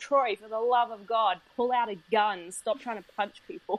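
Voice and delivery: put-on bossy yelling, mild and held in. Retelling yelling at the TV during a playthrough, imitating own yelling. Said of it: "I'm yelling at my T V going".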